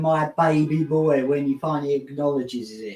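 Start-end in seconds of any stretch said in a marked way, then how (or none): none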